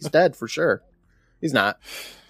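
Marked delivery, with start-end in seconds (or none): none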